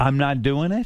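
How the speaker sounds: ordinary talk, nothing marked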